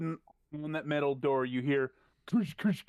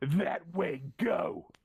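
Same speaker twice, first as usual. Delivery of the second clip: villain-like guard voice. Voicing a guard pointing prisoners down the hall: sounds like a villain. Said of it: "Sounds like a villain".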